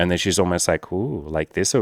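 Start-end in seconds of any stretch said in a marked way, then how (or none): 0.9-1.8 eerie, creepy put-on voice. Acting out an older woman meeting a virgin: imitating a creepy voice. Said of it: "I know I just made that look creepy".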